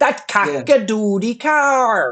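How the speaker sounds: put-on Minnesota accent, drawn-out car. Quoting a movie character's line about a car: imitating a Minnesota accent. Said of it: "this Minnesota accent".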